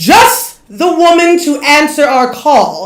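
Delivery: big, booming, proclaiming voice. A character rising into the sky addresses the crowd, booming voice. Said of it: "his voice booms over the crowd".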